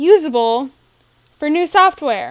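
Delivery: loud outburst, rising in volume, frustrated.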